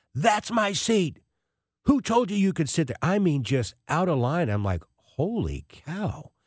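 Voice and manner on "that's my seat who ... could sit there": mock shrill, screaming outburst. Retelling a man yelling at a woman who took his seat, imitating someone screaming. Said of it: "starts screaming at her".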